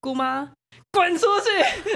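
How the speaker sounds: high, scolding, shouted delivery. Recounting a scene where he told off his aunt at his door: retelling a shout. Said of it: "然后大喊的".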